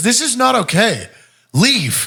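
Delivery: very high, slow, drawn-out yell.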